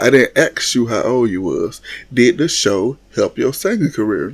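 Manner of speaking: usual speaking voice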